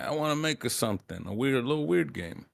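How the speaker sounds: put-on weird, slow Italian accent. Imitating a game director's wish to make a game: weird Italian accent. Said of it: "Weird Italian accent there".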